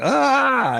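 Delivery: put-on, long, shrill, very high shriek of terror. Retelling seeing a decayed face lean in: retelling a scream. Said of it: "I screamed. It was like".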